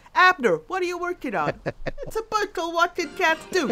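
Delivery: loud, very high New York cat voice. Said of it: "was that New York cat?".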